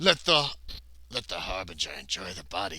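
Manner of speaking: low, gruff voice, sounding distant. Narrating his character's death, voicing someone speaking in the distance, gruff voice. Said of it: "says a gruff voice in the distance".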